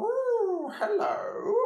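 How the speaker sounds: very high-pitched character voice. Showing a conversation with a pretend partner: Mister Elephant character voice. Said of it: "Mister Elephant and I are having a conversation".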